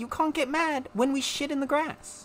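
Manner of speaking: put-on accidental slipped-in American accent. Complaining about having no toilet, accidentally slipping into an american accent. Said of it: "Why did I say that like an American?".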